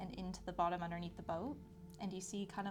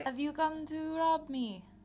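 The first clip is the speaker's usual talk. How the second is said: echoing booming voice, very loud and high; 9 semitones higher, 10 dB louder than usual. A voice in the cavern questions the adventurers; booming voice. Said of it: "a booming voice permeate out into the cavern".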